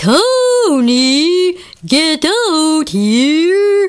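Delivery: deep radio announcer voice, one word drawn out. Calling another character to come out, the speaker throws a deep radio voice. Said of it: "deep, deep radio voice".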